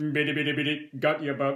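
flat, monotone, mechanical toy-robot voice. Recalling making someone laugh with a robot impression: put-on robot voice. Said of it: "I'd do an impression of the robot".

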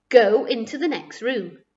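ordinary talk

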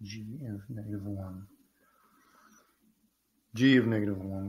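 private mumble, as if to oneself. Checking function values while working a math problem, mumbling to yourself. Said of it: "I'm mumbling to myself".

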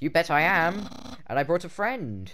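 high, loud, belted skeleton character voice. Voicing a game scene, replying to a greeting in Papyrus voice. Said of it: "I think I've actually got his original voice back".

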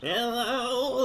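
put-on elderly woman voice. Imitating a woman she assumed was very old, in an old lady voice. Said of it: "that kind of old lady voice".

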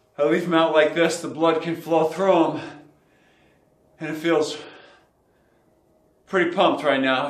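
out of breath, panting, breathing hard between words. Mid-workout, explaining blood flow restriction training to viewers, breathing hard. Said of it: "As you can tell, I'm breathing hard".

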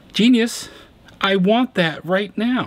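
high, excited outburst. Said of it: "And I'm sitting here thinking".

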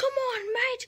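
terrible fake British accent, pitched way up. Clipping on a hat upside down, worst british accent ever. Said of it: "This is the worst British accent ever!".

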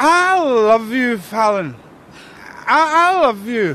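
put-on drunk. A man who couldn't sleep turns up to tell a woman something, drunk. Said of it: "Jazzer, you're drunk".

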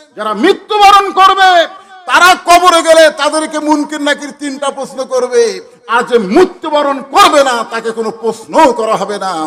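high, loud proclaiming voice.

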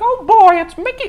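very high, squeaky, projected calling voice. Recalling how they used to throw their voice, the speaker does a Mickey Mouse voice. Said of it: "I would do a Mickey Mouse impression".

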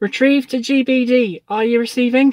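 very loud, slow, winded, out-of-breath call. Calling over the radio to check they can be heard: out of breath. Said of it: "I'm out of breath".

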